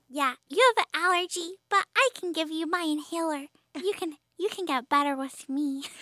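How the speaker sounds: put-on small child voice. Playing one of two little kids in a made-up bit, little kid voice. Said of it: "I can do a kid voice for you".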